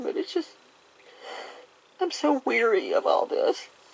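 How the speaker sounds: very high voice, speaking through tears, crying. Telling of help paying expensive insurance premiums, speaking while crying. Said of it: "I'm sorry I'm crying".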